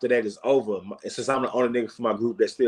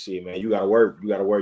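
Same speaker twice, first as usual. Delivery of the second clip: ordinary talk, nothing marked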